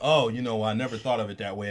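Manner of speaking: ordinary delivery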